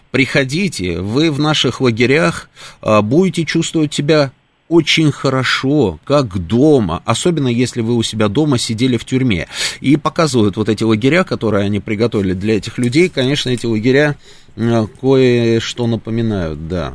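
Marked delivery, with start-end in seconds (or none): 0.1-9.4 play-acted scoffing sarcasm, dripping with derision, sneering. Retelling a German TV clip's invitation to refugees: imitating sarcastic mockery. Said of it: "вот эта издёвка".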